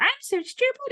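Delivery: very high, squeaky voice like a cartoon character. Speaker shows a trick they recommend to clients: Mickey Mouse voice. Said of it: "I speak to myself like in Mickey Mouse or some crazy cartoon character's voice".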